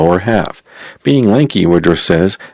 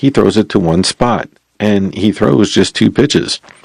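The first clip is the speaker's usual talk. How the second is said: normal talking voice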